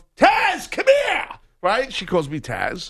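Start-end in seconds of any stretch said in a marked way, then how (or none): 0.2-1.3 put-on shrill yell, pitched way up. Retelling being called across the shop aisle: imitating wife yelling. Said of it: "my wife's yelling".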